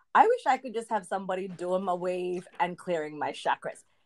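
ordinary delivery

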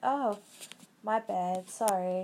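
very slow, drawn-out, mock blasé, dismissive "sorry". Retelling how a girl apologized when confronted in person, mock-sarcastic apology. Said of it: "very sarcastic about it".

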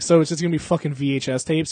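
usual speaking voice

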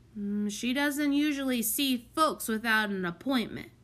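ordinary delivery, nothing marked

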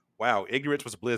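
ordinary delivery

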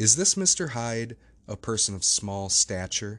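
plain reading voice

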